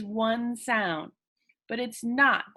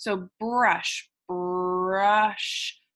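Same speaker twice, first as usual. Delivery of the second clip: much slower, stretched-out sounds; 3 semitones lower than usual. Showing listeners how to stretch a word to hear each sound: stretched-out sounds. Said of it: "So stretchy snaking words".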